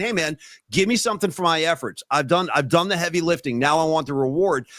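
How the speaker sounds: ordinary delivery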